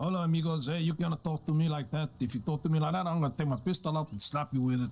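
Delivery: put-on Mexican accent. Performing a quoted speech, in a heavy Mexican accent. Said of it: "with a heavy Mexican accent".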